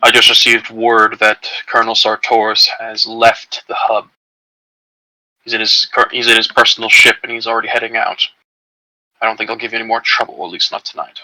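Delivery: quiet, hushed, soft-spoken voice, under the breath. A narrator voices a man who gestures Flint over to speak, in a hushed tone. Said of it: "in a hushed tone".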